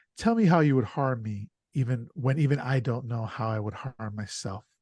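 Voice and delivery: ordinary talk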